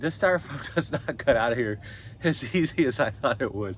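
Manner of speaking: laughs breaking into the words, talking through laughter. Explaining that the styrofoam won't cut out easily, laughing while talking. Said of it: "Sorry, I'm laughing".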